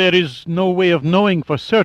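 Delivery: high mumble, frozen with fear. A frightened man under threat answers a demand for numbers, mumbling. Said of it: "he mumbled".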